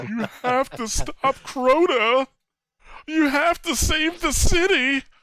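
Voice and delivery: very high, irritating, annoying voice. Mocking a game character's annoying, over-dramatic voiceover: imitating Eris Morn's voice. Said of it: "I fucking hated her voice".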